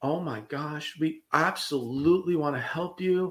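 put-on, slow, sugary sweet southern drawl. Retelling how a girl answered a customer on the phone, imitating a sweet southern voice. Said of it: "sweetest southern pie".

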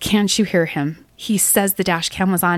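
ordinary talk

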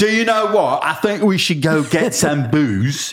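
bad put-on British accent. Joining in imitating a British character from the movie: put-on British accent. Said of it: "It was the worst accents in the movie".

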